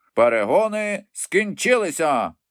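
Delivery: sudden, abrupt, high-pitched exclamation. After half an hour of running, the Dodo calls out to the group: sudden exclamation. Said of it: "раптом вигукнув".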